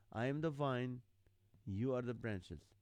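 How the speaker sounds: normal talking voice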